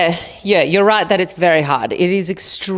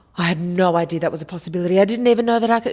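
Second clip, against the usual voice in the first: fast, super sarcastic mock surprise, know-it-all tone. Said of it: "you could be super sarcastic and be like".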